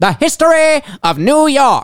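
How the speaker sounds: New York accent. Repeating a book title after the other speaker, in a Yankee accent. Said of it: "I got to say it like a Yankee".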